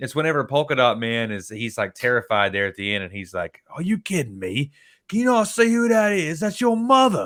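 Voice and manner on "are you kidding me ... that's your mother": very high, swooping, bad put-on English accent. Quoting what a character says at the end of a scene, bad English accent. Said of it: "forgive my English accent; it's horrible".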